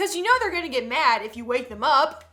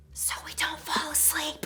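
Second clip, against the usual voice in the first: soft, hushed whisper; 8 dB quieter than usual. Speaker recounting answering a nine-year-old in church, retelling a whisper. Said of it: "Me whispers".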